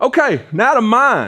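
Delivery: shrill, very high, loud shout. Reading out golf shot numbers on a mic, moving to own shots, yelling. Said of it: "I don't know why I'm yelling".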